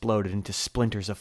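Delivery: plain reading voice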